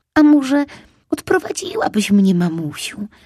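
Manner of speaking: sweet, fawning, coaxing wheedle. A fox cub in a children's story asks his mother, coaxing and wheedling. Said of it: "Przymilnie zapytał Lisek Fumek".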